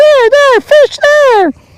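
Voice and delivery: very high-pitched voice, calling out. Imagining a companion calling out fish from the fish finder: imitating Snook. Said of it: "that might be what you sound like, Snook".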